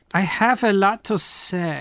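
put-on German accent. Quoting a co-host's usual line, speaker puts on a fake German accent. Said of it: "Are you German now?".

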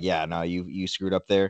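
soft, non-aggressive tone.

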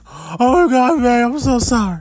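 put-on ugly crying.

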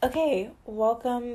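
voice cracking up high on words. Opening a video with a greeting, voice cracking. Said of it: "my voice cracked".

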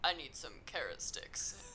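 very deep, hushed superhero-style voice. Retelling answering other players in a game as Batman, lowest Batman voice. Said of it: "I just went in with my lowest voice".

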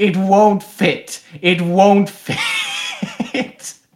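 very slow, high, drawn-out, climbing acted-out scream. Retelling what a man in a green mankini screamed: imitating someone screaming. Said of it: "Screaming at the top of his lungs".

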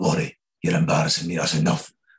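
put-on Scottish accent, fatherly voice. Retelling a father taking the speaker out of a screening: imitating dad's Scottish accent. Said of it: "You've got a great Scottish accent".

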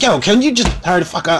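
snippy, sassy, impatient voice with attitude. Retelling the girlfriend character telling him to hurry up: imitating Brenda's attitude. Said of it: "she's got an attitude with him".

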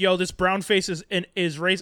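ordinary talk

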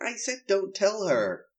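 young boy voice with a put-on American accent. Speaker repeats a favourite movie line in a wee boy american accent. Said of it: "That's my wee boy American accent".

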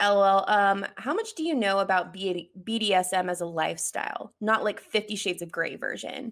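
ordinary delivery

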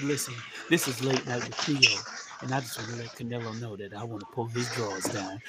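very low, soft, smooth late-night radio host voice. Retelling what a man said in an interview, in Theo's Quiet Storm voice. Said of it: "he put on his Quiet Storm voice".

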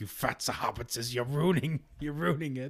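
angry, cross, worked-up creature-voice outburst. Retelling how a character gets mad about the cooking: imitating an angry Gollum. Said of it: "gets mad. He was like".

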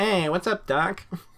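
high-pitched cartoon rabbit voice. Joking with friends about dressing up in disguise: Bugs Bunny voice. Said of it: "Bugs Bunny".

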